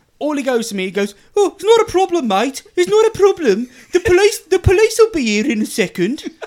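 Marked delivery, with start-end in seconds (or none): 1.4-6.2 put-on Brummie accent, raised and pitched up. Retelling what the other driver said after getting out: imitating a Birmingham accent. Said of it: "I'm gonna offend every Brummie now ever with my accent".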